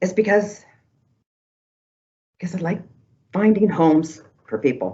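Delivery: voice tight with emotion. Answering why they do their work, choked up. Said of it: "I'm already doing it".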